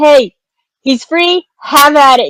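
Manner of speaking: gentle, modest, mild yell. Calling out to allies in a warehouse as Prudence: Prudence yelling. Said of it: "hear Prudence yelling".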